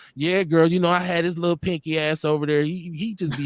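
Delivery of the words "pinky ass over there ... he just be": normal talking voice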